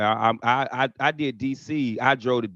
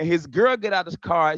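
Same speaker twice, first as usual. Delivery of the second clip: usual speaking voice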